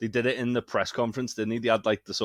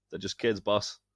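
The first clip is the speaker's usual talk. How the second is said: ordinary talk, nothing marked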